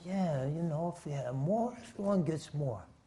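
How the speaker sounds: soft, close-up murmur.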